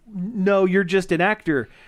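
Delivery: ordinary talk, nothing marked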